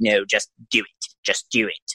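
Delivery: slow, drawn-out, insistent delivery. Retelling a scene where Palpatine urges him on: good Palpatine impression. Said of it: "you do a good Palpatine".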